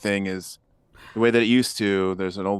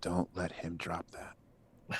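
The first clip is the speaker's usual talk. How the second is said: slow, very quiet, barely voiced hushed whisper; 15 dB quieter than usual. Whispering a warning to another character in the game: whispering. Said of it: "I whisper to Buzzy and I say".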